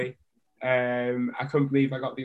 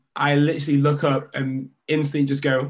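usual speaking voice

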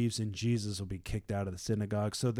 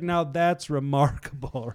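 put-on sarcastic tone, higher and louder; 3 semitones higher, 7 dB louder than usual. Retelling a healed man's dumbfounded reply: imitating a sarcastic remark.

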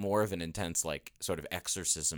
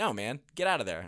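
put-on firm, offhand, stern, dismissive tone; 2 semitones higher than usual. Imitating Jesus ordering a demon out: imitating Jesus, stern and dismissive.

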